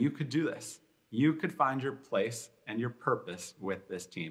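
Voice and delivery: normal talking voice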